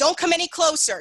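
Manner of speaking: forceful, loud, assertive voice. Teaching over Zoom how to warn someone off: assertive and loud. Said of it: "Assert- assertively".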